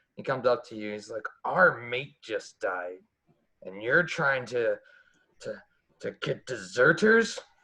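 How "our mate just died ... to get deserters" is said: put-on drunk, tipsy man's accusing voice. A narrator voices a man who comes up to the players after his mate died: drunk man's voice. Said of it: "smell the alcohol on his breath".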